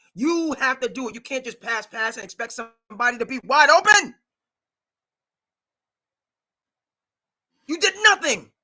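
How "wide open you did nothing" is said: full-on loud shouting, climbing in pitch. Criticizing a team for just passing the ball around, yelling. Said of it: "I'm yelling here".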